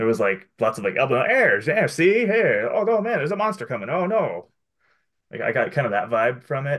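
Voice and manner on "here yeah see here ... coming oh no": high, hammy, corny fifties-movie actor delivery. Imitating how people talked in fifties movies: corny fifties movie acting. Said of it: "the way that people moved and talked and acted, like, in fifties movies".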